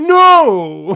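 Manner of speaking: put-on, very loud over-excitement, "know" stretched out. Imitating a guy who was too excited about his topic: imitating over-excited speaking. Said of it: "an explanation point after".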